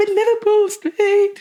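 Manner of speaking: put-on panicky, high voice. Retelling a friend's phone call at four in the morning: imitating a friend's panicked call. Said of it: "You weren't crying".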